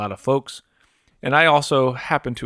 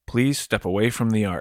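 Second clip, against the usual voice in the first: put-on stern voice. Retelling a museum docent's warning to step away from the art: imitating a stern voice. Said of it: "a stern voice expel back".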